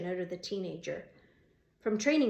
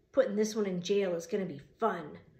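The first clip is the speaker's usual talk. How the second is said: plain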